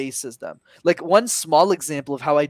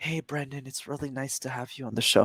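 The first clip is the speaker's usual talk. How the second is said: toned-down, softened voice, much quieter; 7 dB quieter than usual. Podcast host showing how he greets a shy guest, softened voice for shy guest. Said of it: "The second type is the really shy person".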